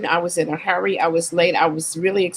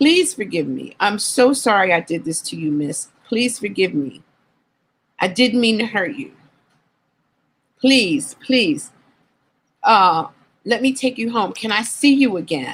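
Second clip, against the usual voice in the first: mock tearful, crying, begging tone; 2 semitones higher than usual. Retelling how a man begged the speaker's forgiveness, imitating a man crying and begging. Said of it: "He begins begins to cry and he begs my forgiveness".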